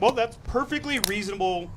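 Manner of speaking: usual speaking voice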